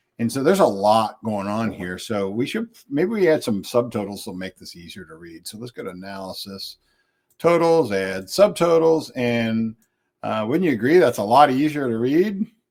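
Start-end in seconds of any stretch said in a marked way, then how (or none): 10.5-12.5 dry, mock-earnest sarcasm, pitched up. Adding subtotals to a crowded table and asking viewers: sarcastic. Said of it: "sense my sarcasm".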